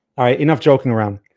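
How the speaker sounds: ordinary delivery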